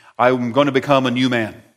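ordinary delivery

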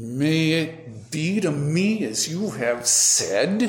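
angry through clenched teeth. Speaker demonstrating a reply to God said angrily, through clenched lips. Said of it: "through angry, clenched lips".

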